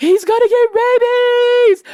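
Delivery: frantic, fast, hysterical screaming yell. A mom recounts what she yelled to Bo: retelling hysterical screaming. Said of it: "I'm screaming hysterical".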